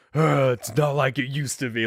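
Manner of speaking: dumb, gruff, grumbling voice. Joking about a monologue Logan never gives: dumb gruff Logan voice. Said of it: "in his dumb, gruff voice".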